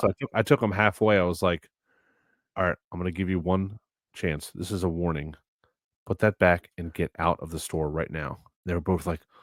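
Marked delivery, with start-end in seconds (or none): 2.6-8.4 calm tone, quieter and lower pitched. Speaker retelling what they told two kids stealing in the store, retelling a calm warning. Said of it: "very calm and like didn't raise my voice".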